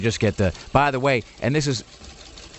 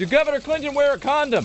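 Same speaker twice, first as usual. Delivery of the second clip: very high-pitched voice. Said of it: "you hear a guy in the background say".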